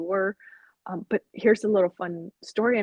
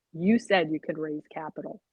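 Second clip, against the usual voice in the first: play-acted firm, stern tone; 3 semitones lower than usual. Retelling what her husband said to her, imitating a stern voice. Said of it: "with like kind of a stern voice".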